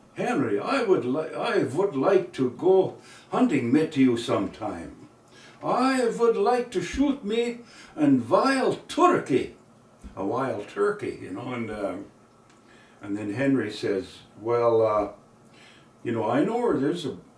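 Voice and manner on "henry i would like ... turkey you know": put-on male German accent, pitched much higher. Telling a story, the speaker quotes John asking his hunter friend, in John's German accent. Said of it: "he says with his German accent there".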